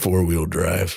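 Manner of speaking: put-on low commercial narrator voice. Performing a truck commercial for another speaker: imitating Sam Elliott. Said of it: "Just imagine him saying this when I say it".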